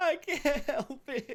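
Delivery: sobbing in a very high, weepy voice. Recounting what a female character said, imitating her crying. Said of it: "she starts crying".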